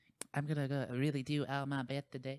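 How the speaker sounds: soft, high, lisping boxer voice. Joking about a bull coming out talking, speaker does a Mike Tyson voice. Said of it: "talking like Mike Tyson".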